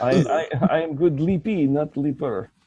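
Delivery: poor Greek accent. Friends joking about leapfrog, trying a bad Greek accent. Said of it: "I can't do a Greek accent".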